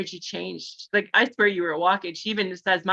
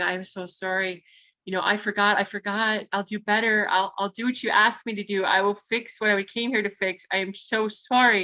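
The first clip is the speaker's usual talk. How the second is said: put-on ugly crying, sobbing through tears. Retelling apologizing to three huge trees: retelling ugly crying. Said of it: "ugly crying, going".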